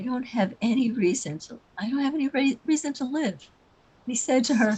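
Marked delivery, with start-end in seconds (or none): 0.0-3.3 very soft muttering, barely above the breath. Retelling a bus passenger's reply to the driver: imitating a very soft mutter. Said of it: "she muttered very softly".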